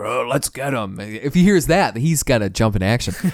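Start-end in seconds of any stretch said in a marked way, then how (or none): 0.0-1.0 put-on grunting voice, quieter, slower. Describing guys arriving in spaceships, imitating grunting guys. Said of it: "just grunting".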